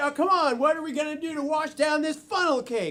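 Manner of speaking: ordinary delivery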